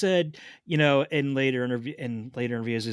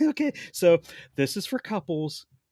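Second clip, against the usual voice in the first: put-on talking through giggles, pitched up; 5 semitones higher than usual. Retelling what a woman said as she showed a purchase, imitating giggling while talking. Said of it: "while she's giggling".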